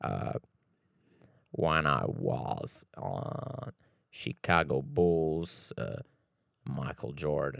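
very slow, deep, breathy, thick-voiced drawl. Imitating a basketball player talking about the Chicago Bulls: deep Scottie Pippen voice. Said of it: "a voz dele era tipo assim, bué da grossa".

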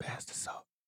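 soft, polite whisper. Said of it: "You gotta say it like that?".

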